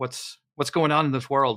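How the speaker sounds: normal talking voice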